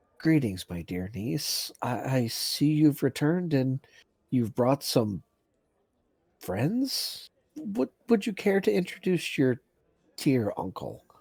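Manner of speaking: speaking in very hushed tones. Uncle character greeting his niece Winter after a long night, in very hushed tones. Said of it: "speak to her in very hushed tones".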